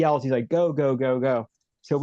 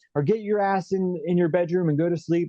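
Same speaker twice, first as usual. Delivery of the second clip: mock stern, fierce, angry screaming; 5 semitones higher than usual. Retelling how his dad answered him at night: imitating his dad screaming. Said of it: "he just starts screaming at me".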